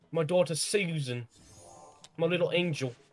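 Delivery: put-on English accent. Imitating another player who says things like an English person: mock English accent. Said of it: "He says".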